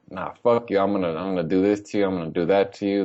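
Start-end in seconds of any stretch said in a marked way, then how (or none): none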